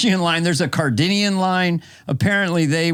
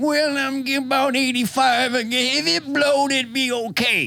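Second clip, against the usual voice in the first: put-on very old woman voice, higher pitch; 9 semitones higher than usual. Retelling what the eighty-two-year-old said about going up: impression of an eighty-two-year-old woman. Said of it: "That's my best impression".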